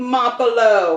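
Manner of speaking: put-on Italian accent. Speaker pronouncing a hamlet's name as asked, in an Italian accent. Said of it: "Say it in an Italian accent".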